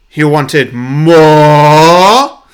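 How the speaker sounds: thundering, booming, very loud, drawn-out. Reading a story pitch aloud, a voice from a fire pit announcing: booming voice. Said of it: "a booming voice announces".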